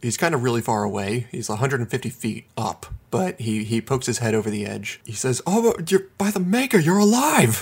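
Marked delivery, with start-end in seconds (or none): 5.5-7.6 very happy, delighted, much higher and louder. A game narrator voices a man calling down from a cliff top, very happy. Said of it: "He sounds very happy about something".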